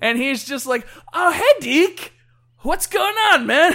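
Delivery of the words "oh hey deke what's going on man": put-on stumbling, loud, pitched-up drunken voice. Retelling a game character stumbling around to farms: imitating a drunk character. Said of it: "stumbling around drunk to all these farms".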